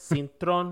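sassy, spiced-up delivery with a little flavor. Showing how to say the surname, then with a little flavor. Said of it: "If you wanna add a little flavor to it".

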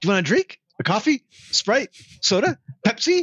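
acted-out, very high, bubbly, super chipper chirp. Describing an actress's speaking scene offering drinks: imitating a super chipper voice. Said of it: "she's super chipper, super happy".

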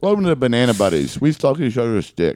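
talking with food in mouth. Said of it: "with the banana in my mouth".

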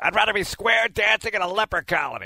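high, complaining, biased-sounding announcer-style voice. Quoting a famous announcer's line: Johnny Most voice. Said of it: "That's Johnny Most".

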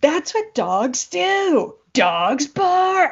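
very slow, drawn-out, high-pitched yelling. Retelling a quarrel with a neighbor over his barking dog: imitating a neighbor shouting. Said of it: "The husband started shouting".

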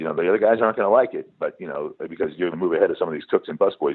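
normal talking voice

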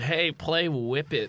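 acted-out, tipsy, drunken scream. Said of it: "got too drunk at the end and screamed".

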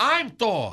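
ordinary talk

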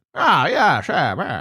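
absurd, exaggerated old Hollywood film-star accent. Showing how nobody could ever have talked, in an absurd Jimmy Stewart accent. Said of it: "his accent was absolutely absurd".

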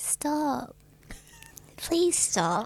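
put-on squeaky cute voice. Pretending to be a tiny person asking someone to stop: put-on squeaky cute little voice. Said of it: "squeaky little, cute little voice".

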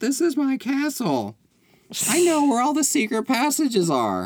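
very high, shouted, sing-song delivery with swooping pitch. Retelling a movie scene, imitating Evie: Evie voice. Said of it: "You sound just like her".

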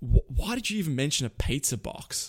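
plain

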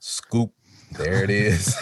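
slow, deliberate, each word stretched out. Speaker repeating his own line from a national commercial: said slowly. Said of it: "That's why I say it slow".

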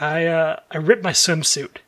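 hushed, quiet, slow, sheepish, embarrassed voice. Retelling what a kid at the pool said: imitating quiet embarrassed speech. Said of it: "really quiet, and you can tell he's embarrassed".

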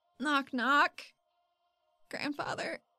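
tentative. Voicing her character approaching a man crying in an alleyway, tentative. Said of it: "She very tentatively".

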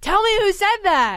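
high-pitched, demanding yell. Retell how she demanded an answer after a pause, imitating someone yelling. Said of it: "But she's like yelling".

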